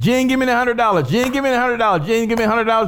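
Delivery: rapid, rattled-off auctioneer-style calling. Repeatedly asking someone for the $100, sounding like an auctioneer. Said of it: "Sound like an auctioneer".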